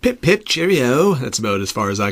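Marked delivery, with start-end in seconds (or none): 0.0-1.1 put-on English accent, pitched up. Podcast co-host, saying he won't attempt an English accent, slips into a mock English accent. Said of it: "You just did it".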